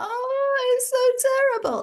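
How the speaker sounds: very high, loud sad lament, drawn-out "oh". Explaining how sadness changes the voice, demonstrate a high sad voice. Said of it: "so it goes higher".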